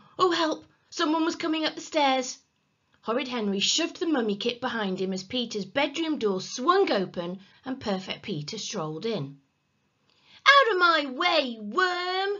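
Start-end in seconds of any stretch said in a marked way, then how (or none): 10.5-12.4 very slow, loud shout, worm stretched out. A boy orders another boy out of his way, shouting. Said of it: "Shouted Henry".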